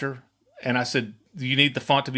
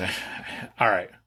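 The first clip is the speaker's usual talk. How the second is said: play-acted gruff, breathy, half-whispered grumble; 6 semitones lower, 4 dB quieter than usual. Retelling a moody client's answer to the director: imitating a gruff reply. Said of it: "kind of gruffed".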